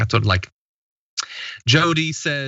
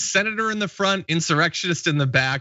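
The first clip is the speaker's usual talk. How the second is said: usual speaking voice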